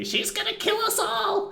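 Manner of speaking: screaming in panic. Playing a character fleeing a fight, screaming in panic. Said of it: "I sort of scream and I say".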